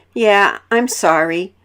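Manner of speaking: slow voice, shaking a bit.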